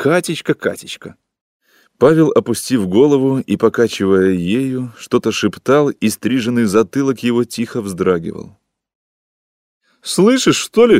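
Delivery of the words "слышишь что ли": shrill, very high-pitched yell. A woman calls out to Pavel, shouting. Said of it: "крикнула женщина".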